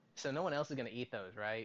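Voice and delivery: ordinary delivery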